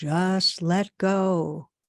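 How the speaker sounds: godlike, heavenly voice from above. Telling a joke, voicing the answer to a man calling for help: booming voice. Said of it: "another booming".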